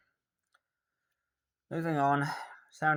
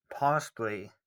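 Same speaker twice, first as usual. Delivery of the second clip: strong stress on the word "possibly". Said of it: "emphasis on possibly".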